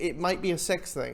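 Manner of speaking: usual speaking voice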